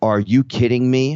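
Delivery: mock yell, high and tearful, bursting into tears, disbelieving. Retelling seeing a dead friend in the living room: retelling a tearful yell. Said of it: "I yell at him as I burst into tears".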